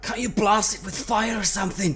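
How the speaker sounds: high-pitched shouting.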